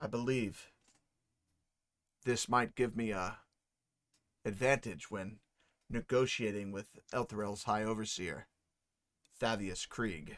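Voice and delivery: soft, hushed, private-sounding half-whisper. Voicing a noble who quietly confides a plan to a player: half-whispering. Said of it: "And he whispers to you".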